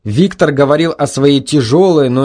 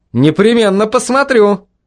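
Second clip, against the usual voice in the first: upbeat, lively, high-pitched, cheerful tone; 7 semitones higher than usual. The narrator replies to a man telling him to watch him on TV: cheerful reply. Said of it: "Жизнерадостно ответил я".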